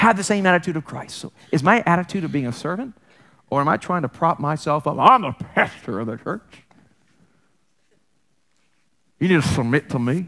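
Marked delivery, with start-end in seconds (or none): 5.0-10.3 put-on American Southern accent. Acting out a pastor trying to prop himself up: Southern accent. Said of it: "I don't know why I have a southern accent when I do that".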